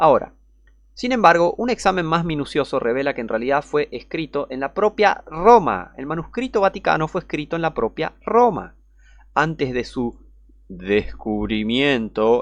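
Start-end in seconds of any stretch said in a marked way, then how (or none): 10.7-12.4 sarcastic air-quote stress on descubrimiento. Describing a manuscript's supposed discovery: ironic stress on DESCUBRIMIENTO. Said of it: "Por eso dije descubrimiento".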